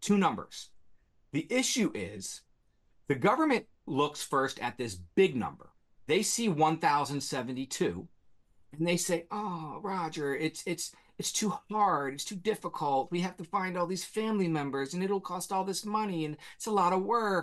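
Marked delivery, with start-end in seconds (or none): 9.3-17.4 high, whiny, whining, complaining tone. Criticizing the government's excuse, the speaker does an impression of it: mock whining government. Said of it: "that's my best impression of the government whining".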